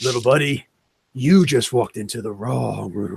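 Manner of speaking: deep, raspy growl like gargling glass. Voicing a character who walks out and addresses a newcomer: deep raspy Tombstone voice. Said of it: "in that deep, raspy, like like like gargling glass kind of voice".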